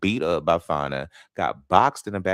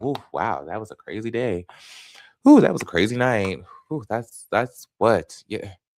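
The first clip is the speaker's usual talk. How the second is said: mock nonchalant, unbothered tone with casual oohs; 4 semitones higher, 3 dB louder than usual. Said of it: "This girl's like".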